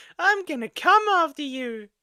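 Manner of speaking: put-on very high, small child voice. Reacting to a clip, a speaker quotes what the little child says, in a little child voice. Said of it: "In that little child voice".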